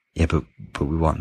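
mock, smug, self-satisfied little tone. Retelling the manager's reply to the punditry: imitating a smug manager. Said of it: "our manager sat there smugly going".

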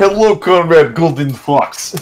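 put-on drawn-out Russian accent. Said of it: "their Russian accent".

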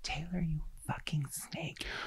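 soft, unvoiced whisper.

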